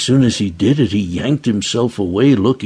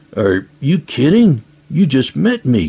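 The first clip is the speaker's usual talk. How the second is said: startled, a little shocked, pitched-up disbelief; 5 semitones higher than usual. Offered a spare bedroom by someone he just met, he replies a little shocked. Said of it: "looking a little shocked by the offer".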